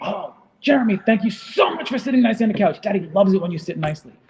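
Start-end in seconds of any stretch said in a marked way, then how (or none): 0.0-3.3 fake, over-eager enthusiasm, high and loud. Parent demonstrating praising a child for sitting nicely: excited praise. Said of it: "there's excitement in your voice".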